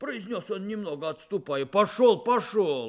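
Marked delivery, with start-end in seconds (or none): 1.7-2.9 shouting, louder. The blacksmith shoves Chub and shouts at him. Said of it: "кричал кузнец".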